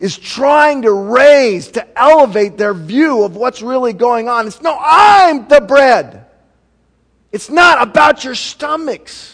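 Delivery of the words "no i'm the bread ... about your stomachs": exasperated, impatient, frustrated, pitched up. Speaker acts out Jesus answering his listeners, with put-on frustration. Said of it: "You could feel the frustration in his voice".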